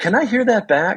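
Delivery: cocky, arrogant tone in a very high voice. Retelling asking to hear a recorded take back: imitating own arrogant tone. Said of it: "I arrogantly said".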